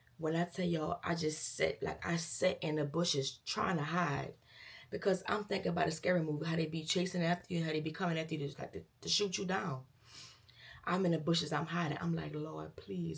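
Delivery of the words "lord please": acted, desperate, pleading, begging voice. Retelling hiding in the bushes from shooters: retelling a desperate prayer. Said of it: "I'm praying".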